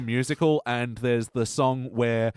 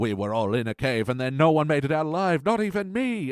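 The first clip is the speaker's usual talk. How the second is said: clumsy, terrible put-on Scottish accent; 3 semitones higher than usual. Quoting a character's cave story: terrible Scottish accent. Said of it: "my Scottish accent is terrible".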